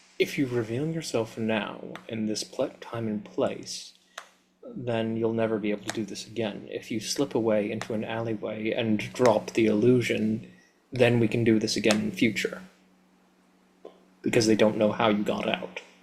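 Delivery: muttered under breath. Speaking in character to a companion about slipping away: said under one's breath. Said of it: "I just say under my breath to him".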